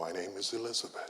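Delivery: barely above quiet. Retelling a woman answering the man pointing a pistol at her, in a very soft voice. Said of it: "in a very soft voice".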